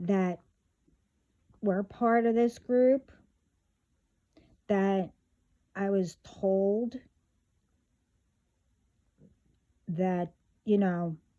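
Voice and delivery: deliberately slow, unhurried pace. Speaker telling a group about karma, speaking slowly. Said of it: "I want to make sure I will speak slowly".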